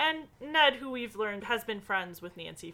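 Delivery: plain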